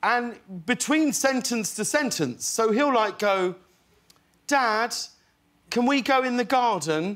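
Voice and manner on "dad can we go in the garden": put-on speaking in British accent. Retelling how a young son talks at home: imitating british accent. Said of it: "talks in a British accent with me".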